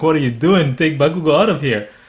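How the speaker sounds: usual speaking voice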